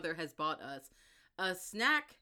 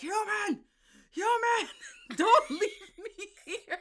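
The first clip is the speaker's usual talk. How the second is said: mock creature scream, much higher, louder; 8 dB louder than usual. Recounting a scene where the Soriel screams as she backs away, retelling a creature's scream. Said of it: "the Soriel is screaming like".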